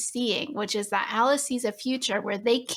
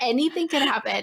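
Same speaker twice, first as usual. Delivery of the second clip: put-on yelling; 2 semitones higher than usual. Retelling watching the movie's fight scene: imitating her own yelling. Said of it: "this is what I'm yelling".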